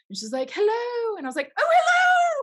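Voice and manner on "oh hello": very high, loud, thrilled squeal. Recounting greeting a woman who said hello: retelling own voice going up. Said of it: "My voice went up".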